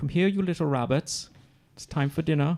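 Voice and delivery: put-on English accent. Trying out how the line would sound: english accent. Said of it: "if they said it in an English accent".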